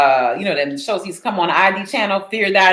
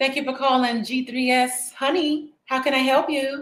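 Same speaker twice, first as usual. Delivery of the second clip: put-on high, soft receptionist phone voice; 7 semitones higher, 6 dB quieter than usual. Answering a call, speak in a receptionist phone voice. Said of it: "got that receptionist ringtone".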